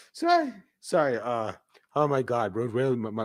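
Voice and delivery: giggly laughing voice, cracking and swooping. Apologizing mid-game while still laughing, laughing, voice cracking. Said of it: "my voice only cracks when I'm laughing".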